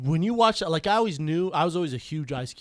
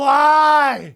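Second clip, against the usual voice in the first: put-on loud sobbing, higher and louder; 10 semitones higher, 12 dB louder than usual. Retelling crying loudly at a friend's funeral: imitating loud crying. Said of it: "I was crying, like, loud".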